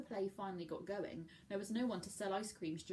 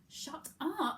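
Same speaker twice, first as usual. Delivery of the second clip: loud hiss through gritted, clenched teeth; 8 semitones higher, 5 dB louder than usual. Murph, escaping up the stairs from Andy, hissed through gritted teeth. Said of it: "hissed Murph between gritted teeth".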